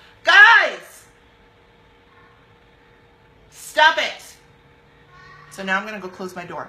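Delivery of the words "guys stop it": very loud, high yell with "guys" stretched out. Pausing mid-talk to yell at others who are yelling nearby, yelling. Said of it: "I'm gonna yell for a sec".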